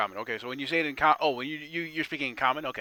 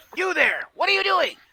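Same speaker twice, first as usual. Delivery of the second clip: very high, very loud, shrill goblin shout; 8 dB louder than usual. Voicing a goblin who spots a hiding adventurer: goblin voice. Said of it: "he says, he says".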